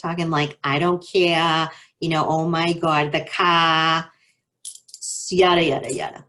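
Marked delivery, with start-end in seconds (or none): 0.6-4.1 Boston accent with the r's dropped. Explaining how people from Boston talk, Boston accent, dropped R's. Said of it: "dropping our R's".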